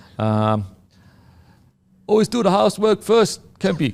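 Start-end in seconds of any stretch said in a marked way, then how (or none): 2.1-4.0 put-on, pitched-up pommy English accent. Quoting his old soccer coach's saying, the speaker tries imitating Philo's pommy accent. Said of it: "I'll try and do a pommy accent".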